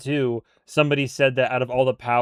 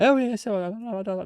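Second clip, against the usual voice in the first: put-on British accent, pitched up; 9 semitones higher, 3 dB quieter than usual. Showing how a friend with a British accent talks: imitating Jay's British accent. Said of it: "the way he talks is very much like".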